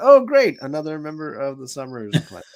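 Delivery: sarcastic read. Reading a listener's comment aloud: reading with put-on sarcasm. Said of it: "I read that with sarcasm just for you".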